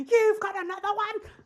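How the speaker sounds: very high, drawn-out, freaked-out panicked cry. Retelling an anime scene, imitating a panicking midwife. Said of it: "his midwife is literally freaking out".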